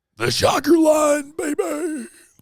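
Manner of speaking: very high, very loud, hoarse, raspy yell. Announcing the show's call-in line in a hoarse laryngitis-like voice. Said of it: "Sounds like he had some laryngitis there".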